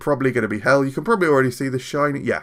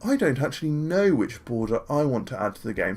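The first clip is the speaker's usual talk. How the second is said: lofty, put-on upper-class voice; 5 dB quieter than usual. Doing an impression of the viewer in a put-on highbrow posh voice. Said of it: "I'll do an impression of you, the viewer, but I'll do it like highbrow".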